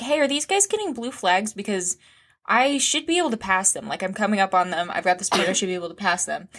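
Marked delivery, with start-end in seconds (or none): none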